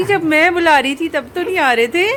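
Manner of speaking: high, loud teasing through laughter.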